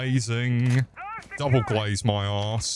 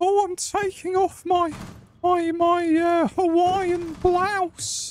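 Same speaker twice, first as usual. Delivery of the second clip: high, put-on woman's voice. Told by another player to flirt in a lady's voice: talking in a lady's voice. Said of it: "talking in a lady's voice".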